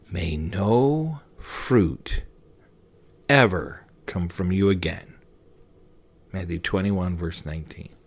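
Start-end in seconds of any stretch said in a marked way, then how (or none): 0.1-5.1 slow, hushed half-whisper, lingering on a drawn-out no. Retelling Jesus leaning against the tree, half-whisper as Jesus. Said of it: "and then he whispers".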